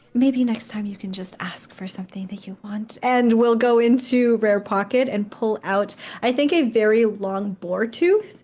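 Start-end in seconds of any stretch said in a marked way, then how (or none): 0.1-2.9 quick, close, leaning-in whisper. A short character leans in toward a taller thirteen-year-old, whispering. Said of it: "kind of whispers".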